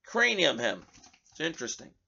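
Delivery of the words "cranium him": usual speaking voice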